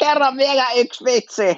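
put-on very high, heavily drunk, boozy voice. Retelling a drunk birthday guest calling out from the back row, imitating a very drunk voice. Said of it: "hyvin vahvasti humaltuneen syntymäpäivä sankari henkilön ääni".

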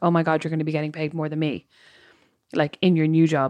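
ordinary delivery

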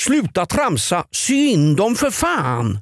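accent from Gothenburg. Repeating the quote of the week, now in a Gothenburg accent. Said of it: "På göteborgska".

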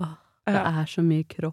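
put-on, acted sigh. Speaker quoting a small sigh heard from Samantha, mimicking Samantha's sigh. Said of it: "Jeg hørte et lite sånn sukk".

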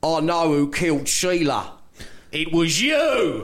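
very slow, attempted Australian accent. Acting a murder-mystery line in character, in an Australian accent. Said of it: "I'm going to try and do an Australian accent here as well".

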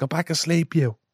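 short, high, barked shout. Joining in on an imagined scene of someone shouting at you, retelling a shout. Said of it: "Fucking shouting at you saying".

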